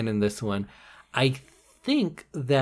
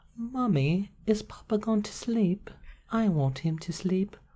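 put-on eerie British child voice, pitched up; 8 semitones higher, 4 dB quieter than usual. Joking that British children seem spooky, the speaker plays one: spooky child voice. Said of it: "it's a spooky child".

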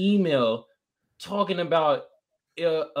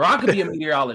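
ordinary talk

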